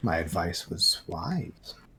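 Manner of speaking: deep, hushed, very slow menace, every word dragged. Playing a Lord of the Rings game, a player does a scary Saruman voice. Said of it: "That was your Saruman voice. That was scary".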